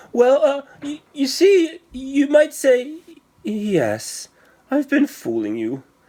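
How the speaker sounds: very high, timid, shy stammering squeak. Narrator reads a little man admitting his trick to two others, shy squeaky stammering voice. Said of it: "stammered the little man in a shy, squeaky voice".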